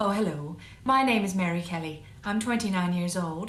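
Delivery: mid-Atlantic, transatlantic accent. Speaker demonstrating accents by introducing herself in each, transatlantic accent. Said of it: "this is a transatlantic accent".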